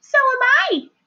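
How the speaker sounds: small, tiny, very high little voice. A second tiny voice answers Wilbur from the top of the doorway, in a tiny voice. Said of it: "said another tiny voice".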